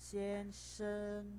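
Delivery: xian and sheng both in high level first tone. Tone lesson on xian sheng, meaning sir: first tone on xian sheng. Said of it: "Xian sheng itu nadanya satu-satu ya. Nada pertama sama nada pertama".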